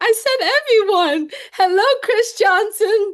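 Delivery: exaggerated, over-the-top, high and loud delivery.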